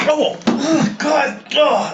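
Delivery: high, pained yelps, sudden cry of pain. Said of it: "My God, are you okay?".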